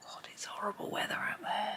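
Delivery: high, soft whisper.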